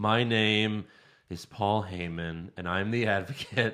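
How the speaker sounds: slow, sad, soft, mournful, dragging announcer delivery. Retelling a ring intro done very slowly: slow, sad Paul Heyman impression. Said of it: "very slow and sad this time".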